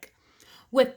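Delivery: ordinary delivery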